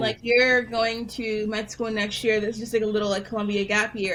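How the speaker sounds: usual speaking voice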